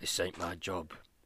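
imitated elderly English voice. Imagining a groundskeeper sent to deal with a dead cow: old english groundskeeper voice. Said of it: "some fucking old English groundskeeper having to come up and being like".

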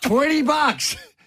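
acted, very high, hollered-out yell. Retelling what a woman yelled at a passing boy on a bike: retelling a woman yelling. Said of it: "She yelled that out to me".

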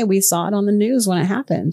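ordinary delivery

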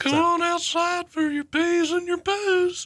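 put-on very high, shrill, sickly old-man voice. Showing off impressions done with a cold, the speaker does a sick Herbert voice. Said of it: "I was playing sick Herbert".

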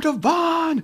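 put-on, very high yelling shout. Retelling cheering from the filming station at a rivalry game: retelling own yelling. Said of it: "I'm yelling".

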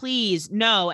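mock tearful sobbing voice. Retelling a scene where a character pleads while sobbing: imitating someone sobbing. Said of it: "sobbing, crying, like, saying".

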